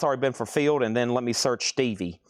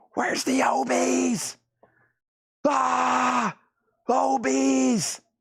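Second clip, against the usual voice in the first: mock scream, very high, very slow, long-held; 12 semitones higher than usual. Act out a man screaming while his dogs want him to chill, screaming like Sam Kinison. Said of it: "he screams like Sam Kinison".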